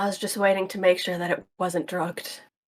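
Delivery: soft, hushed, barely-there half-whisper. In a role-play scene, a character answers another's question, half-whispering. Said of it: "I'm whispering this part".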